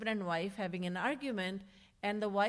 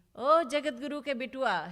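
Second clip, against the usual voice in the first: loud, high, scornful, sarcastic taunt; 5 semitones higher, 7 dB louder than usual. Retelling a story of an angry mother's words to her son: retelling a mother's sarcasm. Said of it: "she would say very sarcastically".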